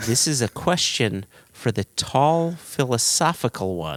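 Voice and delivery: ordinary talk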